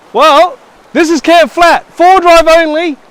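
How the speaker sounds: high yell.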